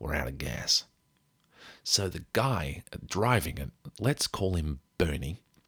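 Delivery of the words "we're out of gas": put-on American accent, gamely attempted. Retelling a driver announcing the van is out of gas: attempted American accent. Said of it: "I gave it a shot".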